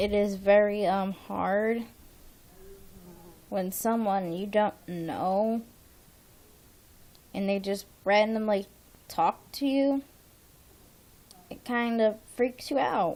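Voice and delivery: dejected, depressed, gloomy-sounding voice. A speaker who has felt depressed all day talks to viewers, in a low, depressed voice. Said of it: "sorry if my voice is really, really low and depressing right now".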